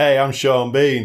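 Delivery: put-on bad American accent. Describing Sean Bean's acting in a movie, doing his bad American accent. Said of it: "I can't do an American accent, but it's sort of like".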